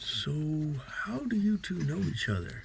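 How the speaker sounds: whispered aside. Scooting back over to him in a game, speaking in Draconic: whispering. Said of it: "I kind of whisper to him in Draconic".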